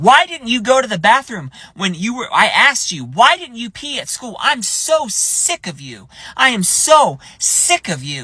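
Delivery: put-on high-pitched screaming, scolding woman voice. Retelling how a woman on the sidewalk screamed at her kid: imitating a screaming woman. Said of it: "She's screaming at her kid".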